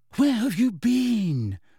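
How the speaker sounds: anxious, worried, high-pitched, with been drawn out. Narrator voicing Hermione as Ron comes back in, anxious. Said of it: "said Hermione anxiously".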